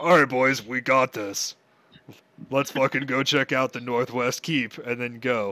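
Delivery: put-on deep ogre voice. Marching his character down the stairs, rallying the boys in Doro's deep ogre voice. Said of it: "But this time it's like a deep ogre [name] voice. / store because he's like 10 foot tall and he's got big hands, / he dies. / But this time it's like a deep ogre [name] voice".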